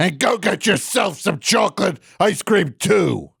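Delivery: slow, angry delivery with real edge. Imitating how the caller said the line: imitating an angry line. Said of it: "You said it so angry".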